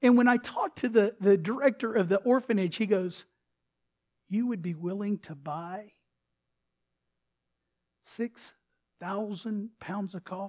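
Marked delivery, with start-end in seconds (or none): 4.3-10.5 soft, trembling, wavering, quivering voice. Retelling what the orphanage director asked, imitating a quivering voice. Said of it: "he kind of gets that quiver voice".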